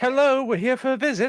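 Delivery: calling out loudly. A player describes his character arriving at a door, calling out. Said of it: "calls out".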